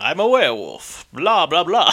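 swooping, put-on stock vampire voice. Switching to a vampire voice mid-conversation: vampire voice. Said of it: "switch it to vampire voice".

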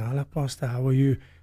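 hushed, reverent voice. Describing churchgoers greeting their pastor, imitating a lowered reverent voice. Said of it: "They lower their voice".

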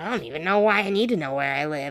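grumbling under breath. Retelling a child's complaint about paperwork: imitating a fit muttered under breath. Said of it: "throws this twenty-five minute fit under his breath".

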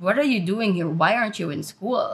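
ordinary delivery

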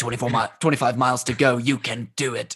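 put-on raspy, smoker-like voice. Joking about a motivational podcast, cheering on runners in a raspy smoker voice. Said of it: "I don't know why I have to go into a raspy smoker voice".

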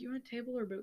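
very quiet murmur, barely audible, hard to catch. Retelling what a man asked them when they got there, super quiet. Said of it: "said it super quietly".

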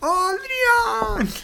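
put-on punch-drunk voice. Quizzing a co-host on a movie quote, imitating a punch-drunk voice. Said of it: "Así con voz así de sonado".

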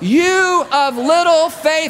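mock, very high, slow, drawn-out calling shout. Acting out Jesus repeating himself over the storm: yelling as Jesus. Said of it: "He's having to yell".

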